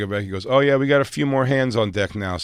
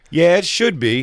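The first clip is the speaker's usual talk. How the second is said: high, raised voice with an offhand tone; 7 semitones higher, 5 dB louder than usual. Retelling a theater worker checking his watch: imitating the worker's tone. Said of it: "That's the tone he said it in".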